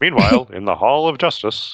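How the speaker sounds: put-on old superhero-cartoon announcer voice, narrating. Recalling a cartoon intro remembered from childhood, cartoon narrator voice. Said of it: "Who used to do that voice?".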